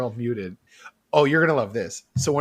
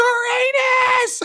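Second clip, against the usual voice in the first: put-on very high, stretched-out, drawn-out child's shriek; 6 dB louder than usual. Retelling a kid's answer about his favorite planet: imitating a kid screaming. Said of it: "he screams".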